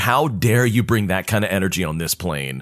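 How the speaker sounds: ordinary delivery, nothing marked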